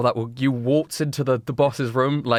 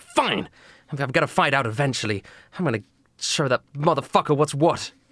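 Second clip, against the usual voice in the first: fed-up, irritated, frustrated, annoyed tone. The narrator voices her giving in since the crew would gang up on her, frustrated. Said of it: "She lowers her gun in frustration".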